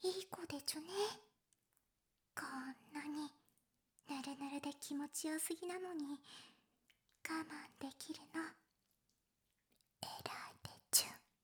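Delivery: put-on speaking in babyish speech. Rem, prompted by the other speaker to try it too: baby talk. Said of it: "レムも言ってみて。".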